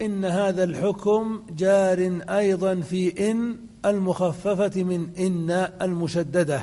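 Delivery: plain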